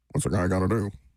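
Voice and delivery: low, flat monotone. Quoting Bill Belichick's complaint to a reporter: monotone Bill Belichick impression. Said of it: "It's so hard to be that kind of monotone".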